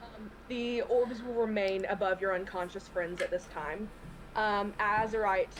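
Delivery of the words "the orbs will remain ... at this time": usual speaking voice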